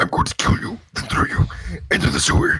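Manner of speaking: high mock monster voice. Asked to do the Venom voice right now: Venom voice. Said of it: "Do the Venom voice".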